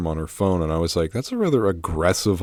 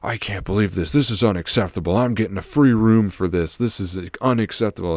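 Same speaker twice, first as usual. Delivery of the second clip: play-acted, agitated, upset freaked-out rant; 2 semitones higher than usual. Retelling a hotel alarm, imitating a guy freaking out in the elevator. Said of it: "one guy was kinda, like, freaking out".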